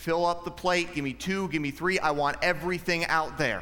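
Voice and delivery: plain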